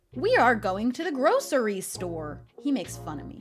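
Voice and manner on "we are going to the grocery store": over-the-top, exaggerated, swooping American accent. Explaining which pronunciation gets teased, in an exaggerated American accent. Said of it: "something like a really American".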